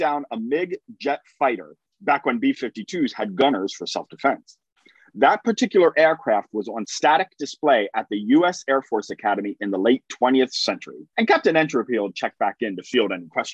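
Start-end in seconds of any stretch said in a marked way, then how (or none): none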